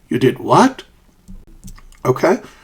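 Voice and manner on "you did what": rising question tune on "what". Showing intonation for reacting to something unbelievable, rising intonation on what. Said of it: "you use a rising intonation".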